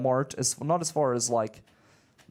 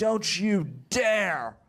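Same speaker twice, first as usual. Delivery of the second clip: mock intense, heated delivery held in check; 6 semitones higher than usual. Retelling confronting a customer who accused the speaker of lying: imitating own screaming. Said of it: "I'm screaming at this guy".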